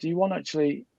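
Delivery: ordinary talk, nothing marked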